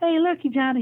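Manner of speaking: very high-pitched, thin coach voice. Speaker retells what the coach said to him after the season, imitating coach's high-pitched voice. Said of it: "He always had a high pitched voice".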